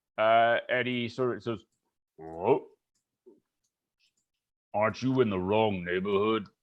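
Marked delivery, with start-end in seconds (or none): 2.2-6.5 low, stocky, stout frog-creature voice. Voicing a bullywug greeting newcomers at the bar: stout bullywug voice. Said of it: "a stout-looking bullywug".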